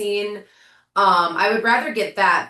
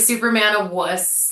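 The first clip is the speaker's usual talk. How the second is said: ordinary talk, nothing marked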